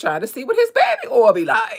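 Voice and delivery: big, loud character voice, pitch swooping all over. Joking about wanting to know what it's like: Armand voice. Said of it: "in my Armand voice".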